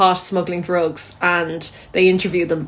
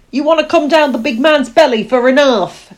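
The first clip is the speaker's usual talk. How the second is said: put-on higher louder Yorkshire accent. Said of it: "they're clearly Yorkshire".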